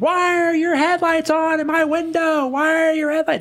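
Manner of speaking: very high, shrieking scream. Retelling a man who ran into the living room at night, imitating a man screaming. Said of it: "starts screaming at the top of his lungs".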